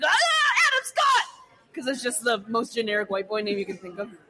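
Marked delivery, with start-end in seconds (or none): 0.1-1.7 very high, choked-out panicked blurt. Acting out a teen pulled over by a cop: panicked blurt. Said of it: "you fucking choke".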